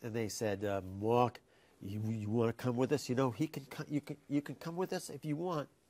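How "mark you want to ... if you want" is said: put-on full New York accent, higher. Quoting what they said when inviting him along, in a complete New York accent. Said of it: "Complete New York accent".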